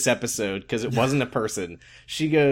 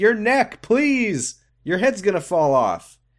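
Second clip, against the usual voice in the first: screaming, pitched high; 7 semitones higher than usual. Recapping a TV show, retelling screaming at the TV. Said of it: "I was like screaming at him".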